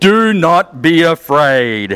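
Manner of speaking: put-on very slow, deliberate, grand angelic proclamation voice. Telling of a quiet night with the sheep, quoting the voice from a bright light: booming voice. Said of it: "booming voice".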